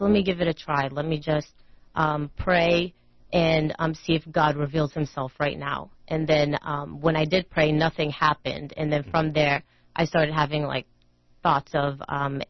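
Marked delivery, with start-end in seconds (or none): none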